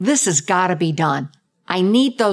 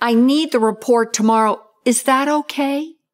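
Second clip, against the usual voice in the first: up-talk, tune climbing on okay; 6 semitones higher than usual. Demonstrating up talk in a second role play, with rising up-talk intonation. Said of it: "second role play".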